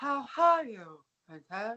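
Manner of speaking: rough put-on dad voice. Retelling a scene, the speaker voices Blair's dad asking after her: impression of Blair's dad. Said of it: "your impression of him is not very good".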